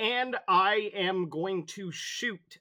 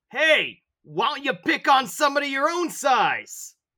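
loud shout, pitched very high; 10 semitones higher, 7 dB louder than usual. Yelling in character at an enemy during combat: yelling. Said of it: "I'm just gonna yell at him".

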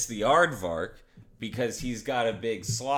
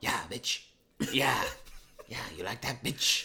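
breathy, small-animal-like little whisper; 6 dB quieter than usual. Retelling a scene where a ferret guy whips a cow: Ren from Ren and Stimpy voice. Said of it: "the rat who sounds like, uh, Ren from Ren and Stimpy".

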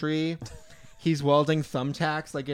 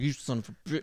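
angry, pissed-off outburst, broken off; 4 dB quieter than usual. Retelling how MacGruber reacts when a car cuts him off: imitating MacGruber getting pissed. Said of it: "he gets all pissed".

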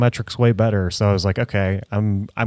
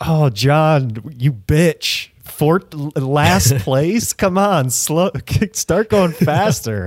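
mocking put-on instructor yell, much higher, slower; 6 semitones higher than usual. Speaker imagines a Peloton class instructor mocking a rider, imitating a mocking yelling instructor. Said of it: "the lady's like yelling at all, like making fun".

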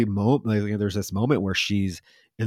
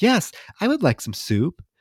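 very high, creepy, matter-of-fact mannequin voice; 9 semitones higher than usual. Retelling a scene, voicing the mannequin's reply, imitating a creepy matter-of-fact voice. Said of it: "so like matter of fact and so like creepy".

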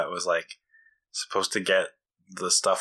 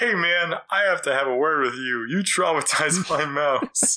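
aggrieved, put-out, upset complaint, a bit higher; 8 semitones higher than usual. Retelling a movie scene, quoting the mouse's owner: imitating Mouse Guy, upset. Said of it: "I love the way he says it".

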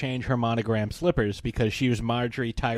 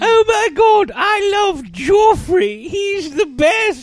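bad put-on young woman voice, higher and louder; 10 dB louder than usual. Mocking a character's journey, doing the worst Sophie Turner impression. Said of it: "the worst Sophie Turner impression".

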